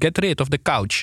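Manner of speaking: put-on Italian accent. Retelling what a man said about an office couch, in his Italian accent. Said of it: "met zijn Italiaans accent".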